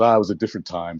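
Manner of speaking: very wistful, faraway, longing, reminiscing musing. Retelling the speaker's wife watching a close-up, mimicking a wistful tone. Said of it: "in a very wistful tone just goes".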